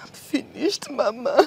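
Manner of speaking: crying while speaking. Answering a worried mother who asks why she is crying: crying. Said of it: "Why are you crying?".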